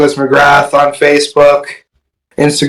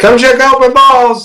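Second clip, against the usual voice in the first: acted yelling, higher pitch; 10 semitones higher than usual. Retelling calling out to people at an expo: imitating own yelling. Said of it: "I'm yelling out to people like".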